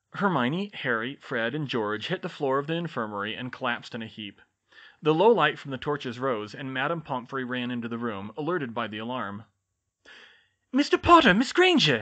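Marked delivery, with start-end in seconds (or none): 10.8-12.0 very high-pitched, very loud cry. Madame Pomfrey runs in as the students collapse on the infirmary floor, exclaiming. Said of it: "she exclaimed".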